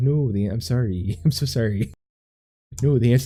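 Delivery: smug, pompous, condescending, superior quiz-host voice. Mocking how the quiz host answers wrong contestants: pompous Alex Trebek impression.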